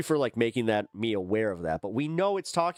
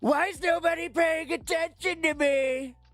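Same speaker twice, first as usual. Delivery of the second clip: put-on politician voice, squeaked out very high. Mocking how he would act if ignored: imitating Donald Trump. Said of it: "then he's just".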